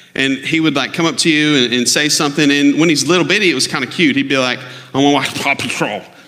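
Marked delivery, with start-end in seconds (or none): 4.6-6.0 growly duck-like voice with quacking, impeded speech. Describing a boy's speech impediment when he was little, growly Donald Duck-like voice. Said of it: "like this weird like Donald Duck thing".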